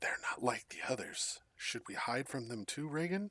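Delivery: put-on hushed, whispering child voice. Narrator voicing a child speaking from one of the beds, in a child's whisper. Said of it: "it's kind of speaking in a whisper".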